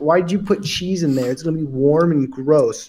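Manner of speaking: ordinary talk, nothing marked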